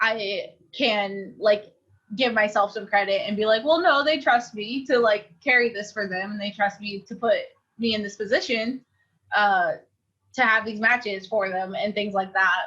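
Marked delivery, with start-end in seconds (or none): none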